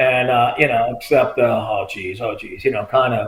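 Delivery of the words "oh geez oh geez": low, slow remorseful mutter. Retelling what the arrested men said: imitating remorseful muttering. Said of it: "remorseful kinda thing".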